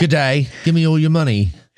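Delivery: put-on poor Australian accent. Playing an australian mugger demanding money: bad australian mugger accent. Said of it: "Like an Australian mugger".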